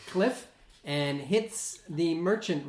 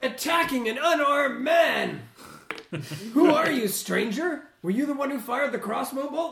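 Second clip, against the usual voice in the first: loud, high merchant-style yelling; 9 semitones higher, 5 dB louder than usual. Voicing a merchant who yells at a player's character: merchant yelling. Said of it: "you hear this merchant yell out at you".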